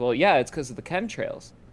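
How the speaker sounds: ordinary delivery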